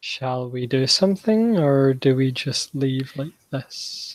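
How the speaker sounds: close, leaning-in, hushed half-whisper. Voicing a character leaning in to speak into another's ear: half-whispering. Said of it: "well, whispering, basically".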